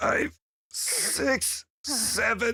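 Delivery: winded, panting, breathless, very high. A character counts reps while training: out of breath. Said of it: "Let me catch my breath".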